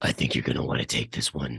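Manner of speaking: deep, hushed, low rumbling mutter under the breath. A bearded, cloaked dwarf speaks down from the ceiling, a deep rumbling mutter. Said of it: "mutters in a deep set rumble".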